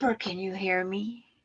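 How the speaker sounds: whispering. Testing whether the others can still hear: whispering. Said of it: "I can whisper".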